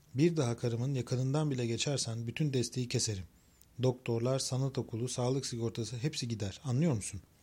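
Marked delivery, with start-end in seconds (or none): none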